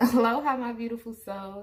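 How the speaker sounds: words broken up by giggles, laughing. Greeting the audience while laughing at oneself, laughing while talking. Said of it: "I'm sorry, I'm laughing".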